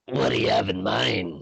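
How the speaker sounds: put-on goblin voice, rough and creaky. Player speaks as the enemy goblin, not in own voice; enemy goblin voice. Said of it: "in the goblin's voice, not in my own".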